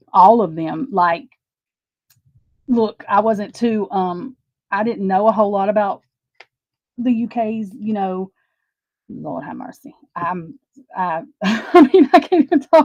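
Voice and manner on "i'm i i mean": very slow, loud, halting stammer, very drawn out. Speaker struggling to talk about the UK's problems: stuttering. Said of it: "I'm stuttering".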